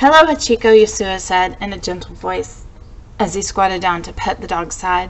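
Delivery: ordinary delivery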